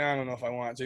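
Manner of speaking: ordinary talk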